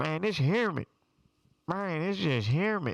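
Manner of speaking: loud, high, fake Memphis accent. Speaker retells what they kept saying on arriving in Hawaii, fake Memphis accent. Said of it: "I faked a Memphis accent".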